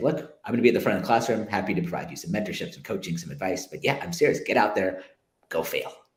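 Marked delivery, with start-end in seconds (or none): none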